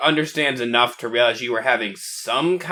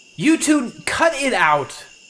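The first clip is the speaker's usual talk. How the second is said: high-pitched yelling; 8 semitones higher than usual. A player's character calling across to two others, yelling. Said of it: "I'm gonna yell over at the other two".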